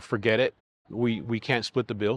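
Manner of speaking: ordinary delivery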